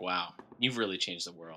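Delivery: flat, very quiet, low deadpan. Retelling how a guy read someone's credits from a script, imitating deadpan delivery. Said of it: "just in his deadpan so delivery".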